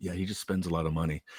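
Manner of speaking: soft, hushed half-whisper spoken aside. Retelling what another friend said about a claw-machine player: imitating a half-whisper. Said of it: "another friend just kinda whispered to me".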